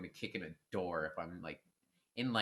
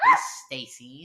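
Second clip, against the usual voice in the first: put-on high, loud girlish voice; 5 semitones higher, 16 dB louder than usual. Mocking girls in crappy horror movies: imitating a Barbie-girl horror movie type. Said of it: "girls that are always like".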